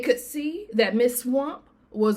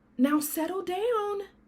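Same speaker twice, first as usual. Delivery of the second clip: very high, sweet, soft voice; 9 semitones higher, 5 dB quieter than usual. Reading a story aloud, the teacher calming the class: sweet voice. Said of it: "said Miss Nelson in a sweet voice".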